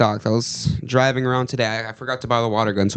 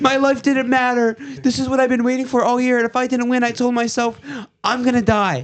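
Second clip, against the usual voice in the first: shrill, very high, weepy sobbing breakdown; 13 semitones higher than usual. Acting out a fake meltdown after being told to break down crying: mock crying breakdown. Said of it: "break down crying".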